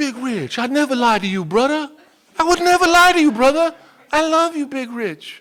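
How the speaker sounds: put-on Samoan-Hawaiian accent, pitched very high. Retelling what the man you sponsored told you, imitating Leroy's accent. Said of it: "And he had this whatever accent".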